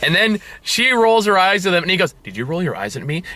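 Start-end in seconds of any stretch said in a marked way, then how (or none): 2.2-3.2 hushed, stone-cold, dead-serious tone. Retelling a scene, the speaker quotes his line to her, retelling a dead-serious line. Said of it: "In like a dead serious voice".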